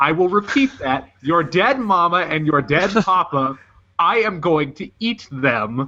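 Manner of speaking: composed, matter-of-fact, eerily calm menace. Retelling how a character threatens a kid: imitating a calm menacing threat. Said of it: "very calmly".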